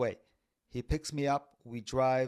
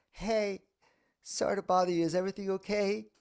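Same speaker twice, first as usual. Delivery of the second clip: put-on high, small childlike voice; 7 semitones higher than usual. Retelling asking a man if everything is okay: inner child voice. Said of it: "my voice is like the inner child voice".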